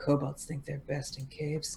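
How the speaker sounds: very soft, low, under-the-breath mumble. Voicing a character reacting to a quest offer: muttering under her breath. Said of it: "mutters something under her breath".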